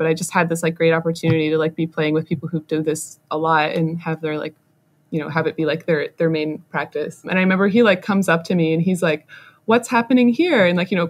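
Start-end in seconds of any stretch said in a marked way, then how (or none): 9.7-10.7 puzzled, quizzical tone with pitch rising up. Speaker retells a man walking up to ask something, imitating a quizzical question. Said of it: "kind of like quizzically like".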